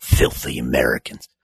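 muttered under breath. Voicing a character who hurls a rock at the players, muttered under breath. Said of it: "mutters under his breath".

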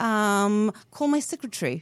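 put-on, attempted British accent. Asked whether they can do a British accent, British accent. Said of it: "Do British accent?".

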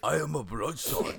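deep voice, put-on Chinese accent. Answering a request to do Vin Diesel in a Chinese accent: Vin Diesel with Chinese accent. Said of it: "put on a really, really deep voice".

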